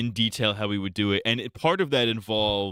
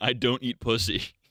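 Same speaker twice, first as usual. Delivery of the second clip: ordinary talk, nothing marked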